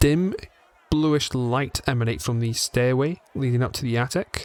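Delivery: plain reading voice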